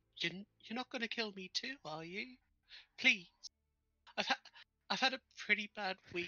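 meek little voice. A narrator voices someone found inside opened train cargo: meek little voice. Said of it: "hear a meek little voice saying".

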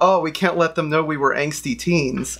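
ordinary talk

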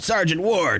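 rough, gruff soldier voice. In a recording session, calling for the sergeant, gruff voice. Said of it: "If I do any more gruff voices".

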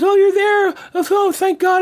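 acted, very high-pitched, hysterical sobbing. Retelling a late-night phone call from a then-wife: imitating Francine crying hysterically. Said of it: "she's, like, hysterical".

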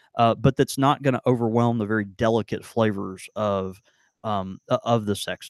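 ordinary talk

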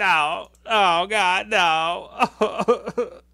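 high, very slow, drawn-out agonized dying wail. Acting out a wrestler melting in the ring: imitating someone crying out while melting. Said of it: "Kane starts melting in the ring going".

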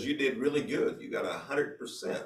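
very soft, hushed, very quiet whisper. Retelling what an instructor said after a test: imitating a whisper. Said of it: "he whispered to me".

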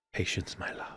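hushed, soft, breathy, barely voiced whisper. Repeating a line from the film to the others: whispering a quoted line. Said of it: "It's weird when you whisper that to us".

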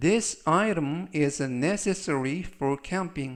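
very slow, careful model English reading. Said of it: "천천히 세 번씩 읽어드리고요".

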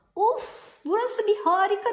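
very high, loud, thrilled, excited shriek of wonder. Pırıl reaches the little hill with her friend and lets out an excited scream. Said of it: "diye çığlık attı Pırıl".

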